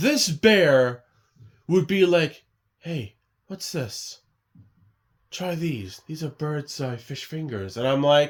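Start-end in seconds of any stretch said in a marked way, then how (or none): 2.8-7.8 quiet, eerie gangster voice. Recalling a fish fingers ad where a bear speaks from the fridge, creepy Birds Eye bear voice. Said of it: "give the bear a creepy voice".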